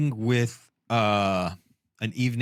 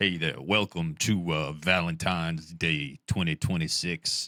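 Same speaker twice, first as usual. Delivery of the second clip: smooth, put-on impression voice; 5 semitones lower, 4 dB quieter than usual.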